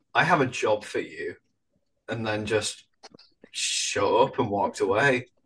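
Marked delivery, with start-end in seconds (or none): none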